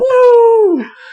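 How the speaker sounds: "woo" screamed, very high and loud. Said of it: "He's screaming".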